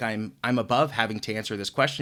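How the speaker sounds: normal talking voice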